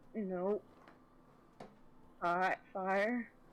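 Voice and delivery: very sheepish tone. Bambi replying to the group about Echo: sheepish. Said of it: "very sheepish and says".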